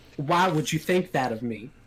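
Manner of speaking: put-on Southern accent. A game master voices a dwarf answering the players, in a put-on southern accent. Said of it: "that was a southern accent?".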